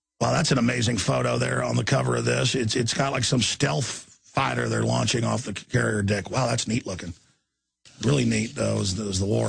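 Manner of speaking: sarcastic, tongue-in-cheek tone. Commenting on a photo of a fighter jet on a carrier: sarcastic. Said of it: "I'm being sarcastic".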